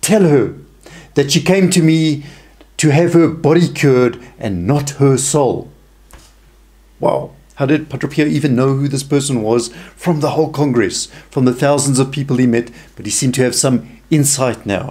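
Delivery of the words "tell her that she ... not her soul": put-on stern, harsh, severe, unsparing tone. Retelling what a saint answered about a woman, imitating a harsh, severe tone. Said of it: "with a harsh and severe tone".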